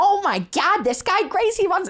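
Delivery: very high, not-quite-right put-on aunt voice. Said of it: "that's not what she sounds like".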